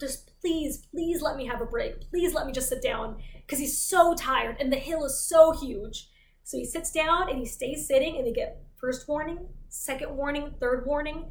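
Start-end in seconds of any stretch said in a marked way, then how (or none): 0.0-3.2 pleading voice, quieter. Retelling how a tired walker begs the soldiers for a break: imitating someone begging. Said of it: "he starts begging with the soldiers".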